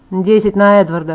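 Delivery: plain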